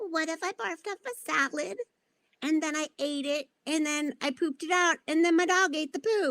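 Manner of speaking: tiny, small, high little voice. Imagining Jane saying something gross to the roadies, speak in Jane's tiny little voice. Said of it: "in her tiny little voice being like".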